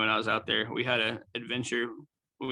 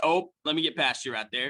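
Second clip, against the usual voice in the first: exaggerated, put-on Midwestern accent; 4 semitones higher than usual. Showing a typical Midwest way of saying excuse me: put-on Midwest accent. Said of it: "that's a Midwest kind of thing".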